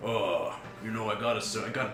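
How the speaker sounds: very soft, quiet mumble under the breath. Game master voicing the dwarf Brock on guard duty, talking to June, muttering under his breath. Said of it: "the dwarf kind of just like under his breath".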